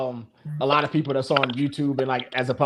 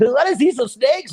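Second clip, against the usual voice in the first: fake cheerful youtuber voice, higher and louder; 10 semitones higher, 5 dB louder than usual. Mocking a phony YouTuber intro: put-on phony YouTuber voice. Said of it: "I'ma start being super phony".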